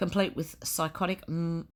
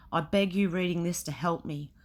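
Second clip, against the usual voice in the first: ordinary delivery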